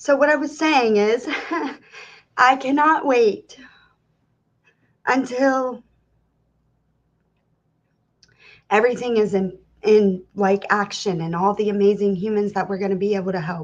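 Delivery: fighting back tears. Speaker resuming a heartfelt announcement after crying, holding back tears. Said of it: "I was trying not to cry".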